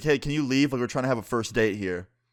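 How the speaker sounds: cross, irritated, angry voice. Retelling what an angry date said to a costumed dancer: imitating an angry date. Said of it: "She was, like, angry about it".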